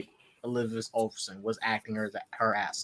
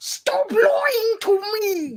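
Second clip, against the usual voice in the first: put-on very high, very loud, very slow childish shout; 10 dB louder than usual. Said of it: "You sound like a little kid".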